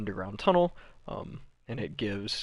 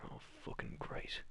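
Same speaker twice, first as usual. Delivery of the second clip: hushed whisper under the breath. Retelling how he reacted to the hole in the ceiling: retelling a whisper to himself. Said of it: "he just kind of whispers to himself".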